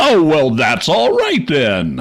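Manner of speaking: abrupt, sing-song, put-on American accent. Retelling a puppet scene, voicing the doctor: sudden American accent. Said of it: "suddenly in an American accent".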